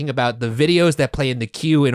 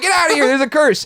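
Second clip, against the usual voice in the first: put-on panic, much higher, faster; 14 semitones higher, 4 dB louder than usual. Describing the start of a ride, the speaker acts out Reggie: imitating Reggie's panicked warning. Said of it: "He's like".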